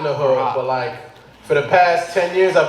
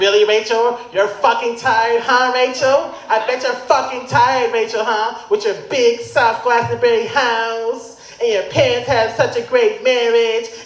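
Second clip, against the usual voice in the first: higher, slow, mock yelling. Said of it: "starts yelling at her".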